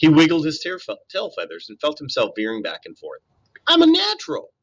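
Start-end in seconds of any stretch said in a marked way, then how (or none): 3.7-4.4 very high, squeaked-out voice. Narrator reading a story voices Brightbill as he soars: Brightbill squeaking. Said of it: "he squeaked".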